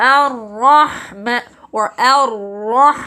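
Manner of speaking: pinched-nose nasal sound. Demonstrating a pronunciation mistake with nose held, holding nose, nasal. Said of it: "When I hold my nose".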